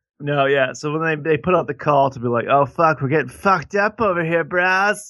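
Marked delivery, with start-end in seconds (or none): 2.5-5.1 pitched-up dude-bro way of talking. Retelling how the British called for help, imitating them as bros. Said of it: "that's how they sounded".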